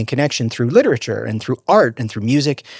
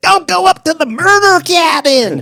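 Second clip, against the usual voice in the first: put-on very high, creepy old man voice; 6 dB louder than usual. Riffing on the horror-movie warning figure, speaker plays it in a creepy old man voice. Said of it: "as an old creepy man".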